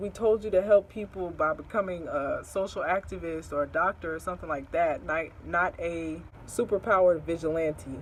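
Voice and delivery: plain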